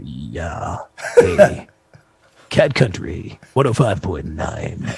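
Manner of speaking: slow, resonant nineties movie-trailer announcer voice. Speaker recalls Paul's station announcement from their nights after the show: imitating Paul's resonant trailer voice. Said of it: "And it just was so resonant".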